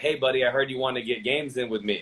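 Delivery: plain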